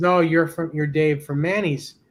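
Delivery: normal talking voice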